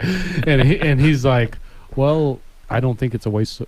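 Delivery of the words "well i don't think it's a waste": play-acted calm, stoic and composed. Imitating a friend's answer about the loan: imitating John Spur, calm and composed. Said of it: "He said it real, real calm and, and, and composed".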